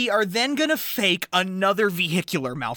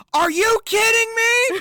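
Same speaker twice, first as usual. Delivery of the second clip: exasperated, fed-up upset shout, loud and high; 5 dB louder than usual. Recapping a scene where Marty yells at Frank: acting out an upset yell. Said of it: "And he's yelling at Frank".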